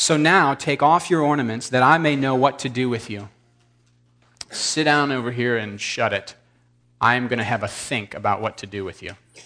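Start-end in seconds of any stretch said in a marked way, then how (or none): none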